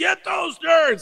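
shouted out slow and high.

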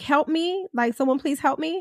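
mock desperate crying, put-on. Talking to a friend, imitating someone crying for help. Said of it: "crying for dear life".

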